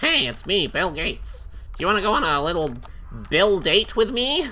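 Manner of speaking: high, creepy, leering come-on voice. Acting out the creepy emails the company's boss sent, do your Bill Gates voice. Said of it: "That's my Bill Gates voice".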